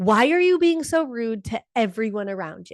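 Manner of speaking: acted-out fed-up, exasperated scream. Retelling a car ride with bickering kids: retelling her own scream. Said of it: "And then I screamed".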